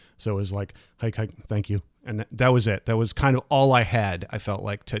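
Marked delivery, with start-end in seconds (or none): 1.0-1.9 very quiet, subdued tone, even quieter. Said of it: "in this very subdued voice".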